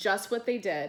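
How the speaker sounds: plain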